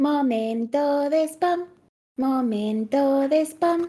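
put-on strained sing-song voice. Announcing the podcast's spam segment, in a forced intoned announcing voice. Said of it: "he entonado y todo así, que me he forzado la voz".

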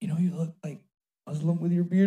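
hushed half-whisper under the breath. Retelling what people say about the beard: imitating someone half-whispering. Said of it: "whisper at me, like".

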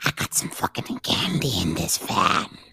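whispered, sleazy, breathy, creepy lurker-like voice. Showing the others how Reptile sounds, imitating Reptile's voice. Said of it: "That's how he sounds".

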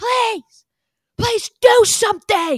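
shrill, booming, drawn-out scream, very high and loud. Retelling a frat bro screaming at the TV: imitating someone screaming. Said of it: "this guy just kept screaming at the T V".

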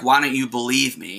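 put-on sobbing, tearful, crying girl's voice. Retelling a video of a girl pleading to be believed: imitating a crying girl. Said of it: "she's fucking crying. She's like".

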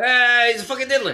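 bad, botched put-on voice, pitched way up. Doing a bad impression for a segment called Bad Impressions. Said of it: "I can't do it. It's bad".

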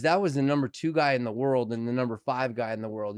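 ordinary delivery

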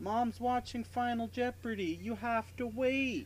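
mock, very high-pitched yell. Retelling how she yelled down to him in the manhole, imitating a yell. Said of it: "she yells down".

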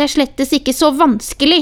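loud, ringing shout. Reading a story, a girl answers her grandmother in an argument: shouting. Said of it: "ropte Sofia".

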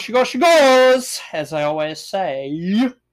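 weird put-on voice, high, loud and drawn-out.

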